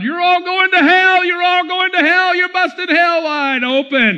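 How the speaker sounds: acted-out, ferocious, high, violent street-preacher screaming rant. Retelling a street preacher at a stadium: imitating a man screaming violently. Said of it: "a man screaming violently at the crowd".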